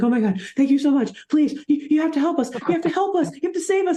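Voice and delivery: mock desperate, very high-pitched, terrified voice. Recapping a scene where a guy who gets picked out begs for help, imitating a terrified plea. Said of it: "This dude is terrified".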